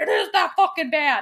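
play-acted, frantic, desperate, spiraling panicked insistence. Retelling a character's line from the story: imitating Reese spiraling in panic. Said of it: "total spiraling".

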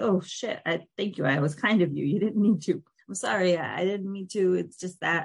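put-on stammering. Retelling a character's reply in a scene, imitating someone stammering. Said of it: "And she's, like, stammering".

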